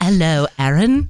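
posh, upper-class London accent. Showing off accents practiced this morning, say a greeting in a put-on High London accent. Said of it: "Or if she's in High London".

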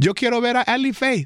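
put-on high, cute little Colombian child's accent. Imitate him asking to see ellie faith, in a cute colombian baby accent. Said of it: "with his little cute Colombian baby accent".

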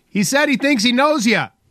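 high, hollered yelled line. Telling a joke, the husband answers his wife's question, retelling a yell. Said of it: "Morty yells".

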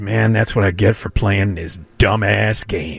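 mock dejected tone. Quoting a guy who put his phone down after the game, acting out a depressed man. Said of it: "he's all depressed".

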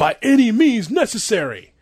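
acted scream. Telling a story about a sportswriter's question, the speaker acts out the reply, retelling a scream. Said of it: "just screams".

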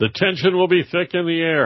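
tongue-in-cheek sarcasm. A commentator remarks on news coverage, sarcastic. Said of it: "I'm being sarcastic".

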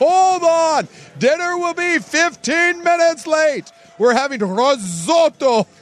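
very high, put-on broadcast announcer voice. Announcing that dinner will be late at home, in an announcer voice. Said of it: "I want nothing more than [name] to use his announcer voice".

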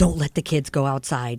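mock-serious deep voice. Speaker retells what a man said on coming into the house: retelling a serious warning. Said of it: "he's all serious".

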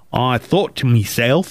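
imitated Australian accent. Reading out a woman's story in an australian accent. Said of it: "I'm trying to convey that this was in Australia".

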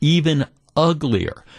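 ordinary delivery

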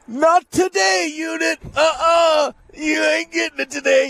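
put-on very high heckling yell, uh-uh stretched. Retelling yelling at the pitcher during a one-game playoff, retelling a yell. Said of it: "I'm yelling".

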